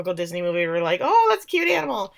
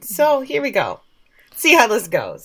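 worn-out, hoarse voice, barely there; 2 semitones higher, 4 dB louder than usual. Starting a show after a six-hour rehearsal, voice almost gone. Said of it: "my voice is just gone".

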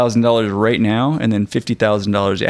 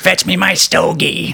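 rough, creaky, high, very slow drawl; 8 semitones higher than usual. Recalling the uncle in Christmas Vacation: William Hickey impression. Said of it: "that's a good impersonation".

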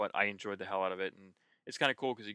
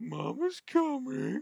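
very high, crazed, wild demonic voice; 4 dB louder than usual. Explaining what happens when the bars run down, in a crazy demonic voice. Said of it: "it's like crazy demonic voice".

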